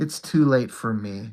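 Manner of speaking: acted, hushed, low, almost sorrowful quiet voice. Retelling a movie scene, repeating a character's line in an imitated sad, quiet way. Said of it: "He said it almost like sadly".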